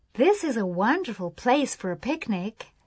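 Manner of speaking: usual speaking voice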